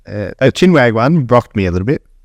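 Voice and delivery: ordinary talk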